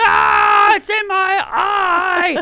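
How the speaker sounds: very high, very slow, drawn-out wailing scream. Retelling getting something in the eye, imitating own scream. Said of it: "as I'm screaming".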